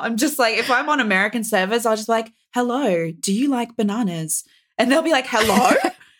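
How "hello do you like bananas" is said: talking like a phone voice assistant. Greeting other players on American servers, doing a Siri voice. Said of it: "I do my Siri voice a lot now".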